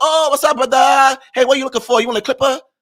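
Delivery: put-on Chinese accent, chatty and friendly. Describing shopkeepers greeting customers who come into their store, imitating a chinese accent. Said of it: "they still got their accent".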